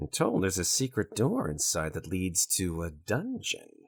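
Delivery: hushed, confidential, secretive aside. A storyteller voicing a woman's reply, secretive aside. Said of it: "she puts her hand beside her mouth and says".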